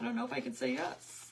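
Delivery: high, flustered, gushing voice.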